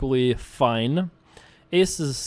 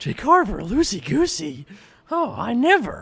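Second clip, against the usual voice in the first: mock surprised mid-forties housewife voice, higher; 9 semitones higher than usual. Reacting to being called loosey-goosey: put-on surprised mid-forties housewife voice. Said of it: "I don't know what voice that was".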